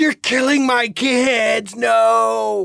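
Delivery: very slow, rasping cry, "no" stretched out. Voicing a character whose pumpkins were just exploded: Jack-o'-lantern screaming. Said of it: "And Jack-o'-lantern screams".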